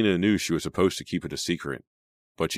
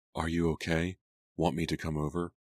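usual speaking voice

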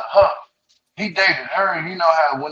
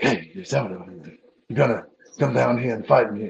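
put-on deep, old dubbed film voice; 7 semitones lower than usual. Joking about wanting dubbing on a TV show, imitating dubbed Bruce Lee movie dialogue. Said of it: "you remember them Bruce Lee movies?".

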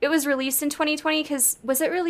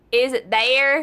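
heavy Southern twang on there. Mimicking people in the South asking about a name, super Southern twang. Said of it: "With a super Southern twang".

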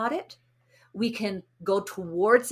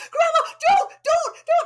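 put-on shrill, loud, very high little girl's scream; 7 dB louder than usual. Retelling a granddaughter's fear in a hot tub: imitating a child screaming. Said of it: "she started screaming".

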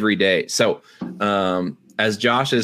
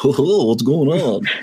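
zany, crazy, goofball voice; 4 semitones higher than usual. Comparing himself to Josh while describing his podcast role: imitating Josh. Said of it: "I'm probably more the Josh that's like".

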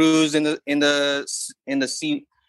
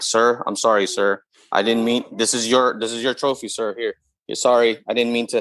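put-on apologetic voice, pitched lower; 4 semitones lower than usual. Imagining a player meekly apologizing to a rival: imitating David Robinson apologizing. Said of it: "he'd be like".

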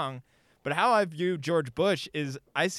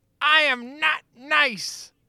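villain voice, very high, loud, drawn-out; 10 semitones higher, 5 dB louder than usual. Retelling a He-Man holiday special scene: imitating Skeletor. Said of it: "and then Skeletor just like".

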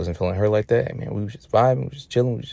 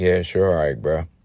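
mock casual, offhand, dismissive brushing-off tone; 4 semitones lower than usual. Retelling a friend brushing off a remark: imitating a dismissive shrug-off. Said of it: "kinda just shrugs it off like".

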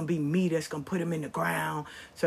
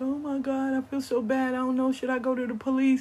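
mock tearful, high sobbing, crying voice; 8 semitones higher than usual. Retelling a lady who came into the store, imitating a woman crying. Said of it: "she started crying like".

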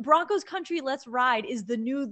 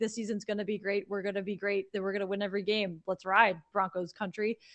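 low, flat, even, droning one-note monotone; 5 semitones lower, 5 dB quieter than usual. Imagining Russell Wilson hosting his own podcast, do a monotone Russell Wilson impression. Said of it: "And it's just monotone".

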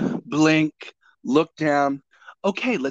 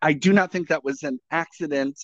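usual speaking voice

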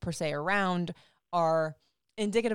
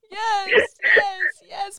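mock sobbing, very high-pitched and very loud; 12 dB louder than usual. Recounting being asked 'can you hear me?', the speaker reenacts answering while crying. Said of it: "I put my head in my hands and started crying".

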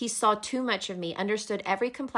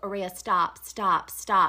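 put-on calming, soothing voice; 3 dB louder than usual. Retelling a scene where he stops her stabbing: imitating a calming voice.

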